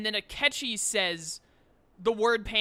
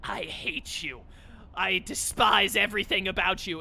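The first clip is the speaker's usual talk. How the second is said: mock, exaggerated super-angry voice, slower pace; 2 semitones lower than usual. Quote the obvious traitor's rank eight line to someone, imitating a super anger voice. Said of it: "in his super anger voice".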